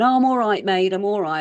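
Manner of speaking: put-on accent from Devon. Acting out a man by the road answering a driver who offered a lift, in a broad Devonshire accent. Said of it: "in this broad Devonshire accent".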